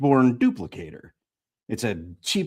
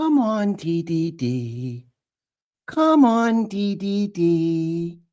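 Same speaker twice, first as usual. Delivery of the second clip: gentle, soothing, very slow, D drawn out; 4 semitones higher than usual. Reading a story, a character coaxes a tired friend: soothing. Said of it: "Pepper says soothingly".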